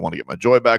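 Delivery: ordinary delivery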